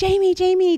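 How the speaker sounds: frantic, desperate scream, shrill and very high. Retelling screaming at Jamie after finding blood down the shirt, retelling desperate screaming. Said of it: "like screaming at her".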